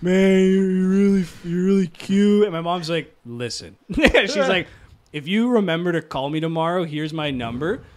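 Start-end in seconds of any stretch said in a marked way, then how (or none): 0.0-2.4 put-on words slurred together like a drunk. Retelling their hammered dad talking to their mom, drunken slurred speech. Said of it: "he was tanked. Like, my dad was hammered. So he was like slurring all of his words".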